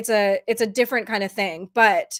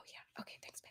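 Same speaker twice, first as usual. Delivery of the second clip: speaking in a whisper, quieter. Thanking another speaker who came in during recording, whispering. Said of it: "I don't know why I'm whispering".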